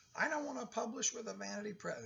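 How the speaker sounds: put-on very high, creaky elderly woman voice. Speaker imitating a weekly caller asking about vanity presses, old lady voice. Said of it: "that was my old lady voice".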